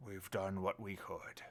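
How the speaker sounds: gruff, rough-edged voice. Narrating a voice that speaks inside the listener's head; gruffy voice. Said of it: "a gruffy voice poking into your head".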